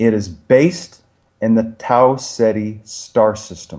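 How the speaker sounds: deliberately slow delivery. Explaining something to a listener, deliberately speaking very slowly. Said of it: "I'm going to say this very slowly".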